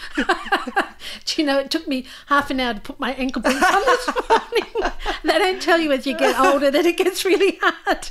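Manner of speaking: high-pitched shouty outburst. Speaker talks to someone they barely know, shouting, high-pitched. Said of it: "I'm shouting again".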